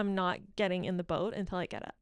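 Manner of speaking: ordinary delivery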